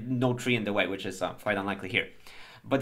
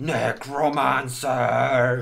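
loud, garbled, twisted monster shout; 5 dB louder than usual. A game narrator voices a creature shouting at the players, in a mangled monster shout. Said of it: "It shouts in this like mangled voice".

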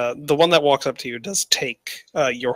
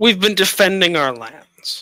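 put-on orc voice, very refined accent, much higher; 7 semitones higher than usual. The game master voices an important orc answering the party, in a very refined accent. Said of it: "and you see a very large orc, kind of in same kind of garb markings that you saw the other ones in. This one obviously is much more important. And he looks you over for a few seconds and begins, ... Speaks in a very refined accent, ... He speaks in a British accent".

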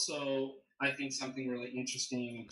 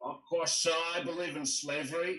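put-on Texan accent, plainly stated; 4 semitones higher, 3 dB louder than usual. Act out the late Tristan Engelhart opening with a shocking statement, in Tristan Engelhart's Texan accent. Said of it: "he had this like Texan accent".

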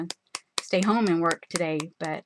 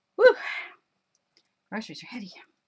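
winded, fast, out-of-breath panting and puffing; 4 semitones higher than usual. Voicing a character carrying groceries home, out of breath. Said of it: "I'm out of breath".

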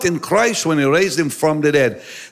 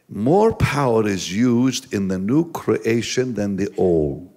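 drawn-out, very low, slow, deliberate delivery; 7 semitones lower, 3 dB quieter than usual. Speaking to young listeners so they really get it, said slowly. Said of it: "We're going to say it slowly".

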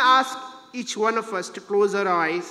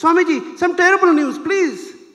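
mock raised calling voice, louder and pitched up; 10 semitones higher, 7 dB louder than usual. A disciple calls again to swamiji, who did not respond, in a louder voice. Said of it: "in a louder voice".

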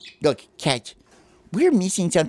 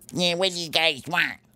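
grumpy, grouchy animal voice, grumbled high; 5 semitones higher than usual. Playing a squirrel answering people who call to it, grouchy Mr. Squirrel voice. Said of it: "why are you grouchy?".

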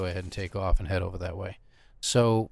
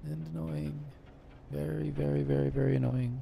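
hushed, soft, quiet muttered aside; 6 semitones higher, 5 dB quieter than usual. Game streamer picking a planet to land on, adds an aside, said quietly. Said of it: "As I'm saying quietly so you can't hear me say it".

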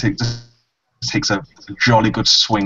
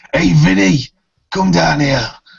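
loud call shouted upward, pitched high; 5 semitones higher, 5 dB louder than usual. Voicing a character in a hole in a boat: shouting up to someone. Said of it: "he just shouts up".

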